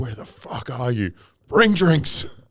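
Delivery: angry, hostile, harsh father voice. Quoting the listener's earlier message back to them, in a mock abusive-father tone. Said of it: "Just the abusive father tone".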